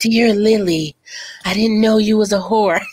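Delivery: gloomy, brooding, melancholy lamenting voice. Acting out a period-movie artist writing a letter: mock brooding melancholy. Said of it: "they're all, like, brooding and melancholy".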